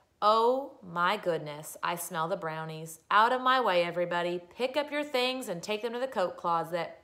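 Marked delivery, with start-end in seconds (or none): none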